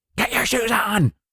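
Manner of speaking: exasperated, high, fed-up shouting. Acting out a parent telling a child yet again to put shoes on: mock yelling at child. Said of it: "why do you always yell?".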